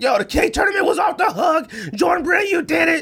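high, pumped-up shout. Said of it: "they were like".

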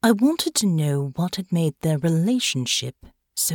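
ordinary delivery

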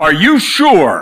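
mock wicked, sinister, horribly evil tone. Retelling how a woman answered a weakened man, in a mock horribly evil tone. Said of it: "In a horribly evil tone".

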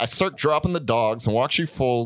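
normal talking voice

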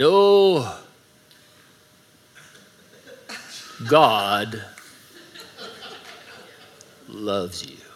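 very slow, drawn-out voice, every word stretched. Imitating Chuck Smith on old tapes: slow Chuck Smith voice. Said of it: "it was really slow".

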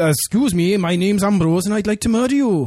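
polite put-on Welsh accent. After one failed try, the speaker retries a put-on Welsh accent as Ambrose. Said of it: "Do an accent".

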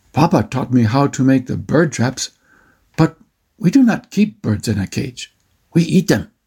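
ordinary delivery

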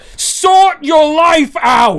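put-on furious yelling, high-pitched. Retelling what plays in their head about self-described gamers: angry Shaun of the Dead roommate yelling. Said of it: "the angry roommate from Shaun of the Dead in my head".

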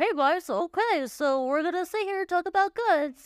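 very high, squeaky cartoon voice. With summer colds, the speaker shows how they sound: Mickey Mouse voice. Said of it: "that's why we sound like Mickey Mouse right now".

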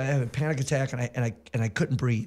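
ordinary delivery

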